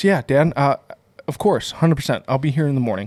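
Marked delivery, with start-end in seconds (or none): none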